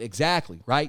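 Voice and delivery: ordinary talk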